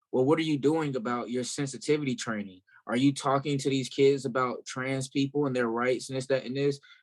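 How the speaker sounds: usual speaking voice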